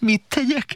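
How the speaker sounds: very high, sheepish, a little scared. A narrator reads the court jester's reply to the king, grinning, a little frightened. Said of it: "Vigyorgott a bolond kissé megszeppenten".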